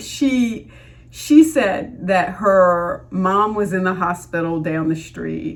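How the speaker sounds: choked-up voice, emotion catching in the throat. Retelling what a man told him, getting choked up. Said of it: "I'm getting choked up".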